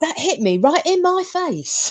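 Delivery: shoddy put-on London accent, pitched way up. Act out how the man on the recording reacts, in a really shitty London accent. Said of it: "Obviously not in a really shitty London accent".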